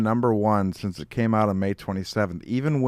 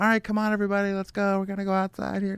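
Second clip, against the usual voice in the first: put-on very high, coaxing toddler-mom voice; 10 semitones higher than usual. Retelling how an actress tried to start a mob: like a mom talking to a toddler. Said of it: "she sounded like the mom of a toddler".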